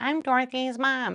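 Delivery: dorky, nerdy-sounding voice. Retelling how she introduced herself for the video: dorky-sounding voice. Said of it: "real dorky sounding".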